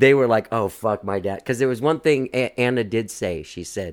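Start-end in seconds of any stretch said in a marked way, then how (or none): none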